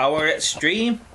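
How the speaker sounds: ordinary talk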